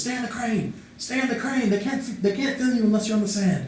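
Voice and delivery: mock shout, high pitched and urgent. Recounting a scene, voicing whoever is yelling at him from upstairs, retelling a yell. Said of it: "there's a guy with a shotgun, and he's he has this long, straggly beard, and he looks like crazy, crazy eyes. / there's a guy with a shotgun, and he's he has this long, straggly beard, and he looks li".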